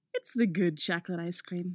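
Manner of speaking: ordinary delivery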